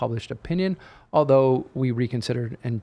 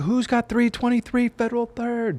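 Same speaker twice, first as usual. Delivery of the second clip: put-on yell, much higher pitch; 11 semitones higher than usual. Retelling shouting in a library while looking for a book, retelling a yell. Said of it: "And I'm yelling in the li- library".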